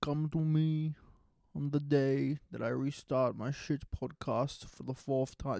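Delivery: poor mobster boss voice. Speaker restarting his podcast for the fourth time calls himself the Podfather, in a bad Godfather impression. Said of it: "This is a bad impression".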